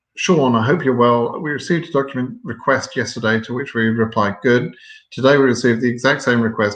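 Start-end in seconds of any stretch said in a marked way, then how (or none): none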